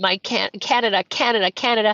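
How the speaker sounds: ordinary delivery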